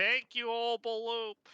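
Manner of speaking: loud, very high yell with level pitch. Describing how Sippy will react, the speaker acts out the reply: retelling a loud yell. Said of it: "and just yell loudly".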